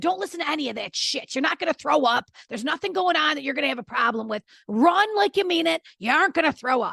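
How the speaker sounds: put-on loud, high, encouraging shouted yell. Retelling calling out to the son across practice: imitating own past yelling. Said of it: "And this is me yelling".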